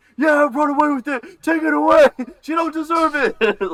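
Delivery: very loud, very high screaming. Retelling cheering at an otter during a show: imitating his own screaming. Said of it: "where I'm screaming".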